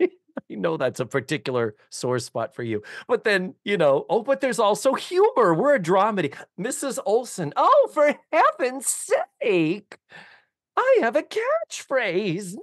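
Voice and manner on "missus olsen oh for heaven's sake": put-on matronly voice, higher and slower. Speaker recounting a line from their dramedy, slipping into Mrs. Garrett voice. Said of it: "I'm doing my Mrs. Garrett voice".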